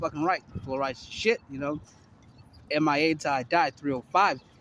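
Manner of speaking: ordinary delivery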